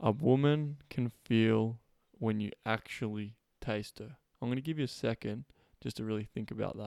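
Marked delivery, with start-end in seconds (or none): 0.0-4.2 very slow, deliberate delivery, drawn out word by word. Repeating a line to listeners so it can sink in, very slow. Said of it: "I'm going to say that again really slow".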